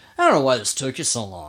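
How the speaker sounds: mock blunt, tactless tone with swooping pitch. Retelling a new arrival's remark about a slow fort siege: imitating a tactless remark. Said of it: "he tactlessly tells Mustafa Pasha".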